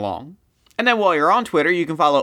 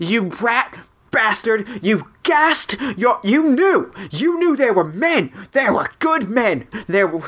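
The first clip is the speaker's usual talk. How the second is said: put-on screaming, higher and faster; 7 semitones higher than usual. Describing flailing like a child in a fight, acting out screaming. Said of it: "Just throwing hands and screaming".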